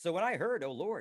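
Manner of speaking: plain reading voice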